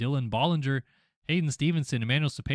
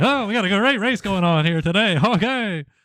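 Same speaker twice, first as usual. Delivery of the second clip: put-on pitched-up, old-time 1940s baseball announcer voice; 8 semitones higher, 9 dB louder than usual. Suggesting a voice for a guest in the studio, doing a 1940s baseball announcer. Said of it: "nineteen forties baseball announcer".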